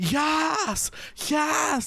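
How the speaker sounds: put-on screaming young female voices.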